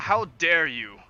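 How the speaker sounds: very loud, indignant, furious outburst. Warning an ambassador not to speak his son's name: angry, in character. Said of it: "looking over at her angrily".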